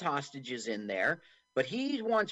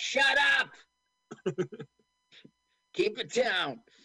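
gruff, hard-nosed cop voice, pitched up; 7 semitones higher, 3 dB louder than usual. Retelling how a tough cop calms Vern: imitating Joe Morton's gruff cop. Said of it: "Joe Morton is a tough, no-nonsense cop in this, and his calming down Vern was stuff like".

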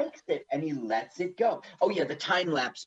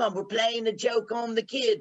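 put-on English accent, pitched higher; 6 semitones higher than usual. Retelling what a man said after picking someone up by boat, in an English accent. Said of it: "Why did you do an English accent?".

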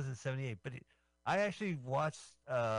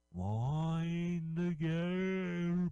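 high, dreamlike announcer voice with drawn-out pause; 5 semitones higher than usual. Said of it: "I'm talking like w-, End of Dreams talk".

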